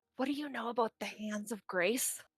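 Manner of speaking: whispering. Whispering a question into someone's ear so others cannot read lips. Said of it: "I'm gonna whisper".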